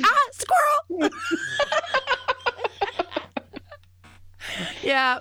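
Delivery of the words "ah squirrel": very high, loud, drawn-out excited squeal. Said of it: "I went".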